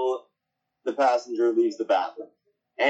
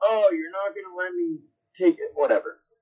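mock, loud, pitched-up scream; 6 semitones higher than usual. Retelling calling out to a whole plane after leaving the bathroom, re-enacted loud scream. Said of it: "I screamed very loudly among the whole entire plane".

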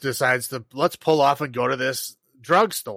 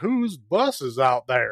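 put-on slow, swooping, dopey-sounding Southern accent drawl. A small town Georgia sheriff comes into the drugstore asking questions, in Andy Griffith's southern idiot accent. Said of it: "Andy Griffith's southern idiot accent".

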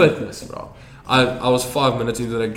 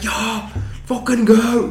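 put-on angry yell, pitched higher; 11 semitones higher than usual. Retelling what Meneer Stoffel shouted at rugby practice: imitating angry Meneer Stoffel. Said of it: "He was so pissed".

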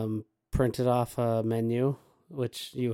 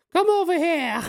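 loud, very high, fake British accent; 8 dB louder than usual. Retelling welcoming guests into the house, ushering them over in a put-on British accent. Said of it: "I went into a British accent".

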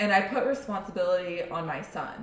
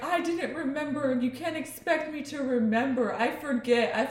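mock child crying and screaming, much higher pitch; 8 semitones higher than usual. Parent retelling a child's tantrum, imitating a child crying. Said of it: "he starts screaming, crying".

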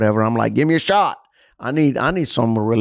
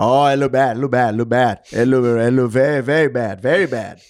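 put-on Indian accent. A patient recalls his doctor giving chest x-ray results, imitating an Indian doctor's accent. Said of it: "this is how he talked".

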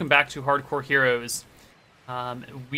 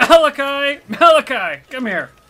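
very high, raised, projected call; 11 semitones higher, 8 dB louder than usual. Game master voices Rohanna outside Malachi's door as he wakes: Rohanna calling through a door. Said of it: "You hear Rohanna's voice outside calling".

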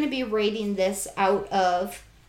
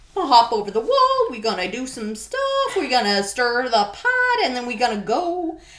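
weird, swooping villainous voice, pitch swinging around; 4 semitones higher, 4 dB louder than usual. Describing Aslan ransacking the witch's fortress, doing an Aslan-as-villain impression. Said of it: "Is that your impression of Aslan? Because that was weird".

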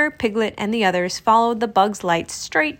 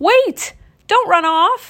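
very high, loud, drawn-out calling cry; 10 semitones higher, 5 dB louder than usual. Reading a children's story, a character calls after a friend running off: cried out. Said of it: "Rabbit cried".

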